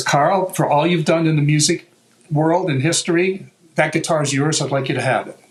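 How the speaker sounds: ordinary talk, nothing marked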